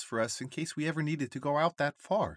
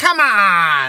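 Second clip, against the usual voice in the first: very loud, drawn-out yell; 3 semitones higher, 18 dB louder than usual. Pri answers nervous Jojo, punching her hand; yelling. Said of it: "Yells Pri".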